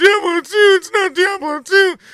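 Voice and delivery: mock very high, loud, sobbing, whining complaint. Mimicking one complaining player among many about the game, mock crying. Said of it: "one person over here is crying and going".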